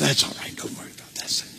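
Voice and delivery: very soft, hushed, breathy whisper. Acting out the devil speaking alongside guilt, starting out whispering. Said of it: "he starts out whispering".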